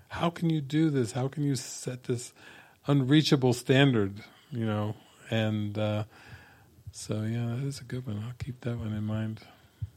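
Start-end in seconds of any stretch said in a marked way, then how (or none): 0.1-4.1 mock priest voice screaming, pitch rising upward. Retelling a film scene where a priest kneels before Jesus: imitating a priest screaming. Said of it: "starts screaming at the, at Jesus, like".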